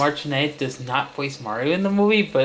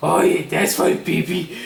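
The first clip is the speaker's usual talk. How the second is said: grating, harsh growl of a voice; 3 semitones higher, 4 dB louder than usual. Showing off his own take on a voice another performer did: Bowser voice. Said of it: "me doing my Bowser voice".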